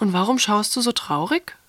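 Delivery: plain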